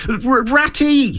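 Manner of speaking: very high, excited, joyful calling. Reading a story, a character calls after the rat walking ahead, joyful excitement. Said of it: "full of joyful excitement".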